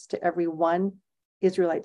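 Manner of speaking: ordinary delivery, nothing marked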